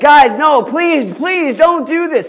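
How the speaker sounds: mock high pleading. Retelling how Joseph, pulled from the pit, begs for his life. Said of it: "Joseph begs for his life".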